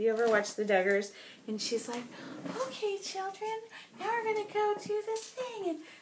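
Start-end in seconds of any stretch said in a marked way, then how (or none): 2.6-5.7 very high, hushed, half-whispered voice. Imitating how a mother of many children talks: half-whispery Michelle Duggar voice. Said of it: "her voice is kind of whispery".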